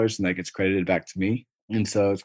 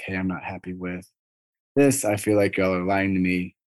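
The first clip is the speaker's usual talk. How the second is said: ordinary delivery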